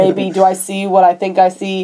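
usual speaking voice

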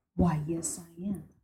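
very drawn-out, very slow, creepy delivery. Retelling how a stalker answered being asked if he followed her: imitating the stalker's creepy reply. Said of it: "Did he say it like that?".

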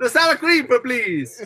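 put-on Italian accent. Retelling an order at a Mexican restaurant, say it in a Mario-style Italian accent. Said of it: "You sounded real Italian right there".

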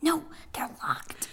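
whispered, very quiet, barely voiced. Reading a story aloud where the characters all talk in a whisper; whisper. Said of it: "They all talk in a whisper".

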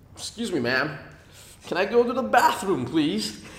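put-on American accent. Retelling how they asked a teacher at school, in an American accent. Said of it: "with American accent".

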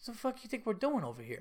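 put-on Italian-American accent. Retelling a bewildered man's reply that made two listeners burst out laughing, imitating Chris, so Italian and funny. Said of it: "it was so Italian and funny".

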